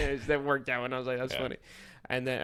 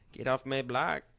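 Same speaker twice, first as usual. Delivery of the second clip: put-on Los Angeles accent. Showing the stereotypical LA Chicano voice after another speaker names it: stereotypical LA Chicano accent. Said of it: "you do a stereotypical LA Chicano".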